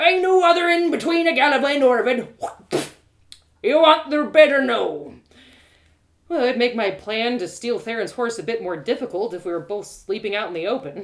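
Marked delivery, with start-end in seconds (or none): 0.0-5.1 very loud, gruff, curt, unwelcoming tone. A narrator voices the innkeeper answering a traveler's complaint about the price: gruff, inhospitable innkeeper. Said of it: "It was the same gruff chap who had been pushing the wheelbarrow full of fish guts, and he seemed no more disposed for hospitality behind the counter than he had appeared behind his barrow. / It was th".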